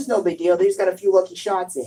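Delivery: normal talking voice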